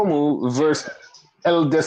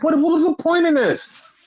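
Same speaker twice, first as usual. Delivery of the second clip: mock bewildered, baffled, pitched very high; 13 semitones higher than usual. Retelling own reaction to a title change: retelling own baffled words. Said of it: "I was so baffled".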